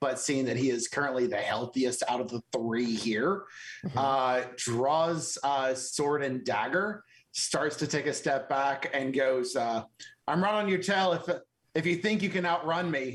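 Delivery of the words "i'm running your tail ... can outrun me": loud, carrying calling-out voice. A character with sword and dagger drawn, stepping back, yelling at Roth and Balok. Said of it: "like yelling at Roth and Balok".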